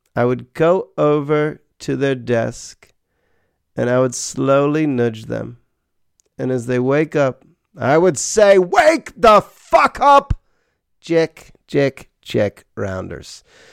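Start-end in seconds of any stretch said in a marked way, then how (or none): 8.6-13.5 shaky, loud, high, swooping, sing-song put-on voice, not great. Waking people at their desks with a line in a John Malkovich impression. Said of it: "I'm about to try my John Malkovich impression".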